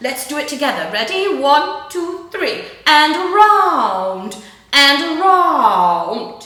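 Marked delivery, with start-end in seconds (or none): 2.9-6.5 very posh grand voice, loud and very slow. Leading a group through shoulder circles, saying the rhyme in a posh voice like the Queen. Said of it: "a very posh voice like the Queen".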